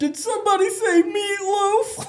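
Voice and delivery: very high-pitched, slow, easy, drawn-out delivery. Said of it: "somebody impersonating him".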